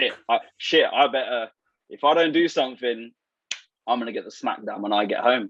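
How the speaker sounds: ordinary talk, nothing marked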